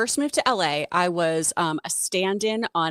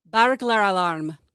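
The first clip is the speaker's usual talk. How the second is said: put-on Scottish accent; 3 dB louder than usual. Asked to say a phrase in a Scottish accent. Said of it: "say burglar alarm in a Scottish accent".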